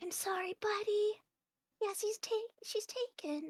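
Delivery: hushed half-whisper, pitched way up. Narrating what a female character says to a buddy, half-whisper. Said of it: "she'll like whisper and be like".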